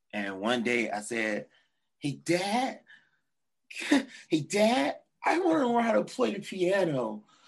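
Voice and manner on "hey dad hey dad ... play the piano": over-the-top, very high, swooping sing-song voice. Retelling his own past words to Dad: put-on exaggerated voice. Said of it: "I'm just exaggerating my voice".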